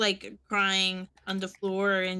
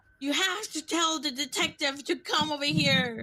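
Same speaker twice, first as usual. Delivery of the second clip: frantic, tearful, panicked pleading, pitched higher; 7 semitones higher than usual. Acting out a call reporting a shooting at the university: frantic crying and panicking. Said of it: "frantic and panicking".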